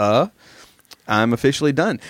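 ordinary delivery

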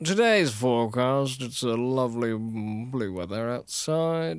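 put-on 1940s vintage radio show announcer voice. Podcaster imitates a radio show guy they heard, 1940s radio show announcer voice. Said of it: "You sound like the radio show guy from".

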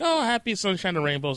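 plain

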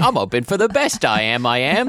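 high, loud, put-on Cockney street urchin voice. Repeating the other speaker's line to show how it sounded: cockney street urchin voice. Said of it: "like Cockney street urchin".

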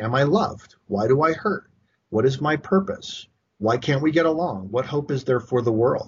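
ordinary delivery

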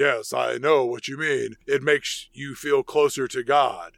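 put-on deep male voice, dropped low. Recapping a movie scene, quoting a character in a deep man voice. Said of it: "Val says in this deep man voice".

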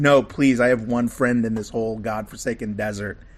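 ordinary talk, nothing marked

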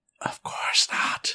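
whispered, breathy, barely voiced. Voicing the goggles answering a player who whispered into them, whispering. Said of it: "you hear a whisper back from the goggles".

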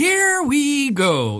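high, badly done fight-night hype announcer call. Praising an announcer's voice, then a bad Mike Goldberg impression. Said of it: "that's a bad impersonation".

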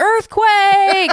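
high, loud yell.

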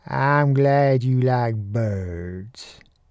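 unhurried drawl, "birds" drawn out. A narrator reads the line of the man teaching him about birds, in a drawl. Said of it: "he drawled".

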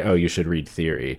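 ordinary talk, nothing marked

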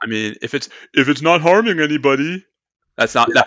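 mocking, parodying put-on voice. Parodying an opposing view in conversation, in a mockery voice. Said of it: "that's my mockery voice".

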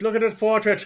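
put-on old-fashioned British accent. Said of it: "That's an accent they all use in that old-timey".

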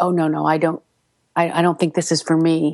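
normal talking voice

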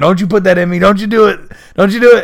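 frantic, high-pitched, rushed, panicked pleading. Retelling a scene where a tied-up character is freaking out: imitating someone freaking out. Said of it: "freaking out".

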